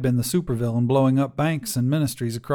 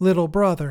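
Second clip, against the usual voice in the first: wispy, faint, crackly static-filled ghostly voice, much higher; 4 semitones higher than usual. Narrator reads a sister's echo greeting her little brother, wispy, static-filled voice. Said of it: "comes a wispy, static-filled voice".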